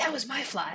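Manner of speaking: whispering. Voicing someone in the crowd whispering to their friend: whispering. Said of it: "you hear someone whisper to their friend".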